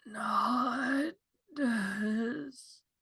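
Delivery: pained, very high, raspy dying voice, not drawn out. A dying person in bed answers someone making a healing potion; very raspy voice. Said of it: "say in a very raspy voice".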